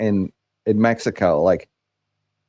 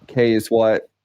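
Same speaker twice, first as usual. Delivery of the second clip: plain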